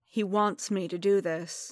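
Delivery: ordinary delivery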